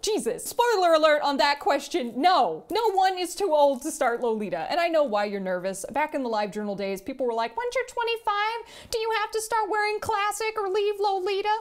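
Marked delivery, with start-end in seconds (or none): 7.6-11.6 very high, goofy, silly put-on voice. Speaker quoting what people asked back in the LiveJournal days, imitating LiveJournal-era voice. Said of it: "I don't know what that voice was".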